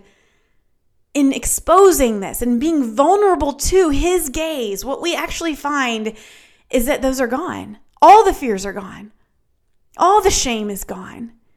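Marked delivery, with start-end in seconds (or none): 4.8-6.1 we stressed heavily. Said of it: "what we find".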